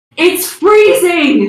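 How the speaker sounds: high, loud, slow shout. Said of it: "she's just shouting".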